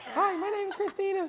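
very high-pitched, polite customer-service phone voice. Imitating how she sounds on a customer service call: imitating Tina's customer service voice. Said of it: "when she does customer service on a call".

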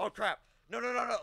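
high, loud panicked yelling.

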